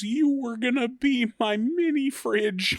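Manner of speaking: put-on very high, tearful sobbing voice. Retelling a cartoon scene where the character is crying: imitating crying. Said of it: "she's, like, crying. She goes".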